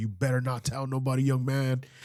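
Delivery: upset, stern, scolding tone. Retelling a warning that someone gave about keeping a story secret: imitating someone upset. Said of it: "he was really upset".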